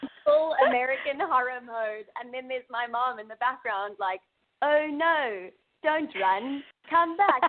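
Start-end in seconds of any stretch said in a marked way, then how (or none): 4.6-7.4 put-on strong, very drawn-out, higher South African accent. Recalling their mom calling out in the background of an audition, imitating mom's south african accent. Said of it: "she has a very strong South African accent".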